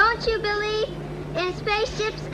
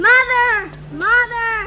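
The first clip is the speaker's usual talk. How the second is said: loud, full-throated shouting; 6 dB louder than usual. Calling out for mother: loud shouting voice. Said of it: "such a loud voice".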